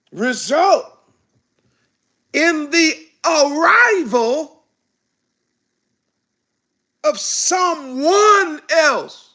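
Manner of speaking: slow, measured, deliberate delivery, word by word. Repeating the statement after being asked to say it again slow, said slowly. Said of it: "Say it again slow".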